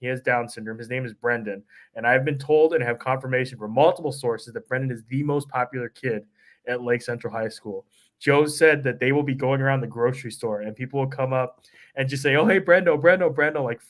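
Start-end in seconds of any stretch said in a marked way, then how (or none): 12.4-13.6 put-on, gushing, thrilled, high-pitched tone. Retelling how people greet the kid at the store: imitating excited people. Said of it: "freaking out, so excited to see him".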